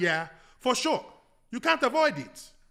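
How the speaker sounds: put-on Nigerian accent on English. Talking about staying up for draft night, in a Nigerian accent. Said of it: "that's my Nigerian accent".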